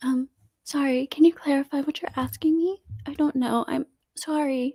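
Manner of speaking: acted, sugary, fake-sweet, innocent voice. Speaker mocks a woman's reply when asked a question: mocking a sweet soft voice. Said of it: "She's trying to be all sweet".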